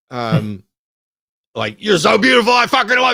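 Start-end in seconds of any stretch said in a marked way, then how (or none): 1.8-3.1 high-pitched, full-blast, very loud shrill yell. Describing a TV episode, imitating Penn yelling at a dog. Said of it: "he yells at the dog".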